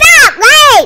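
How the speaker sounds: shouting. Answering who the co-host is: yelling. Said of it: "she can't stop yelling".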